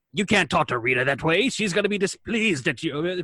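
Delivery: monster voice in toy-commercial style. Recalling how a villain sounded in one episode, in toy-commercial Goldar voice. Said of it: "Goldar sounded like toy commercial Goldar".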